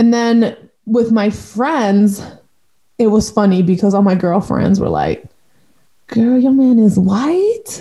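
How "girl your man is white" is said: whispered voice. Retelling what girlfriends whispered about her partner: imitating friends whispering. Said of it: "they would whisper it to me".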